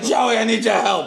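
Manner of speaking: mock drunken speech. Retelling a friend's drunken request at a party: imitating drunk Murr. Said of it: "a drunk Murr saying".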